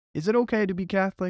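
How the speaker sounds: put-on New Jersey accent, very high. Speaker mimics a nerdy new jersey guy; new jersey accent. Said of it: "in a New Jersey ac- accent".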